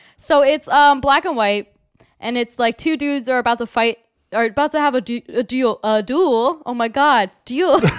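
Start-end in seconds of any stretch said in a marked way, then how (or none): 5.8-7.8 slipping into French accent. Telling a story to a co-speaker, slipping into a french accent. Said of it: "You slip into a French accent for some reason".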